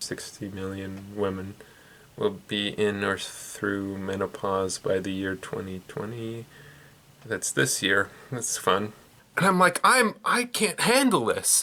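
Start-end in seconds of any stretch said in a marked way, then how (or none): 0.0-6.4 terrible low, flat, droning monotone. Imitating a child reading aloud to the class: flat monotone reading. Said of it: "they're reading in this terrible monotone voice like".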